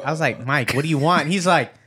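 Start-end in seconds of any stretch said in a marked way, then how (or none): none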